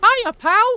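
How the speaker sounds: pitched way up into a loud squeak. Showing how high the voice goes: Mickey Mouse voice. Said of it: "can't really do a very good, uh, Mickey".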